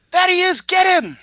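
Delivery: very high, loud, alarmed calling shout. Laying out a plan, the speaker acts out what they'd shout: shouting. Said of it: "shout out in Spanish".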